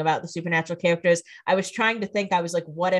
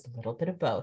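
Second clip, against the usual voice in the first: low, sultry, sexy delivery; 6 semitones lower, 10 dB quieter than usual. Retelling how a character turns around and answers: sexy voice. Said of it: "he turns around all sexy and says".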